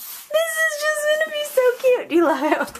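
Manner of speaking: very high, squeaky, bouncy squeal of excited delight. Excited while putting a project together: high-pitched squeaky voice. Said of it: "she's in her high-pitched squeaky voice".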